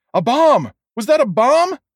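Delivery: very high, loud, piercing scream. After a blast in a store, a voice deeper inside asks, screaming. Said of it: "another voice screamed".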